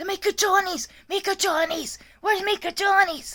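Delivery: shrill, very high, crazed, demanding, frantic yell. Stuck in a room, retelling how a woman kept yelling; imitating a woman yelling. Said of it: "She just keeps yelling".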